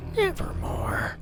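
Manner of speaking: creature voice, bird-like, pitched very high. Narrator voicing the bird creature in the story: Starscream-esque voice. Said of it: "give him like a Starscream-esque voice for the bird thing".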